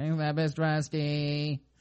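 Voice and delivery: put-on robotic text-to-speech reading voice. Showing how an article reader makes him sound, in a robot voice. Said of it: "I sound like this".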